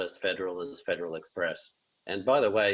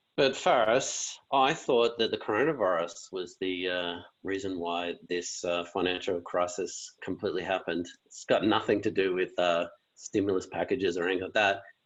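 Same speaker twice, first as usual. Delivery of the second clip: normal talking voice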